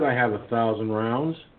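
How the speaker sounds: ordinary talk, nothing marked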